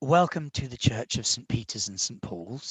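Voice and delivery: soft-spoken, gentle, soft-voiced tone. Game master voicing a deacon welcoming the players to the church, in a soft voice. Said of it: "he says in a soft voice".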